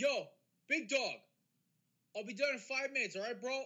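full-volume, loudest-possible bro-style holler. Retelling how a guy on the train turned and yelled at the speaker, loudest voice possible. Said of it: "in the loudest voice possible goes".

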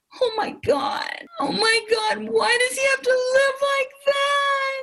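tearful sob, pitched very high, drawn out. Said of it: "And I started crying".

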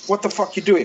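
normal talking voice

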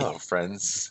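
soft, hushed golf-broadcast announcer voice. Opening the show with a golf broadcaster introduction: Jim Nantz voice. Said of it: "introducing this show like Jim Nantz".

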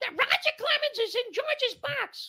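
very high, very loud, shrill overexcited announcer shout. Speaker imitating how Suzyn Waldman reacted on air, overexcited Suzyn Waldman impression. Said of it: "Okay, Susan, calm down".

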